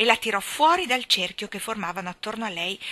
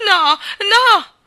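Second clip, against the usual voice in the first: shrill, loud crying-out shout; 11 semitones higher, 12 dB louder than usual. Jane, just told she cannot go home, shouting. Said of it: "gridò Jane".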